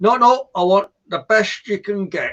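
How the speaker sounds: attempted northern English accent. Retelling a shop customer asking for the best toilet brush, northern english accent. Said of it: "I'll try and do a northern accent".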